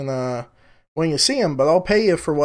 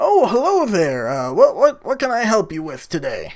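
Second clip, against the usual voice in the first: put-on older man character voice; 3 semitones higher than usual. Narrating to players, voicing the man behind the desk in an older man character voice. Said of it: "there's an older balding man kind of behind the desk".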